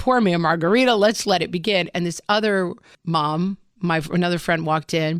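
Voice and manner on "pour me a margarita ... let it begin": ordinary delivery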